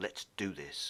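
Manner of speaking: fierce, hushed whisper. Narrator reads the man's line as he steps out of the car: fierce whisper. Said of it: "he whispered fiercely".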